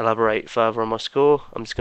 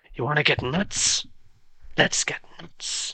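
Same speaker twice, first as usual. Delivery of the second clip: slow, breathy, hushed, unhurried half-whisper; 5 semitones higher, 4 dB quieter than usual. Performing a requested movie line as a Michael Keaton impression. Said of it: "give us your best Michael Keaton".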